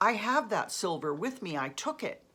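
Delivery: plain reading voice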